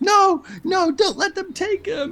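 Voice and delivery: shrill, tearful, very high, drawn-out scream. A game master voices a woman being held back by a player, screaming. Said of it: "she's screaming".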